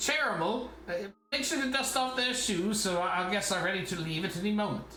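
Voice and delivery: high, barking yell. Voicing the butler giving orders to another servant: butler yelling at a servant. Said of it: "he yells at another servant".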